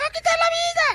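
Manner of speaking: put-on very high, girlish young woman's voice. A storyteller voices the young woman in a retold police story, in a put-on girl's voice. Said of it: "Y otra vez la muchacha".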